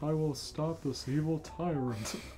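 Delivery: lazy, low, hushed, mumbling drawl. Listener to a story reading voices the hero's line; lazy Bill Murray voice. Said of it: "in his lazy ass Bill Murray voice".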